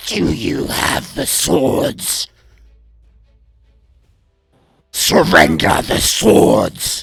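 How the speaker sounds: warped, booming, loud, slow, creaky, drawn-out monster voice. Narrating a scene to listeners, voice what looms over them in a twisting voice. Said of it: "you hear in this like twisting voice".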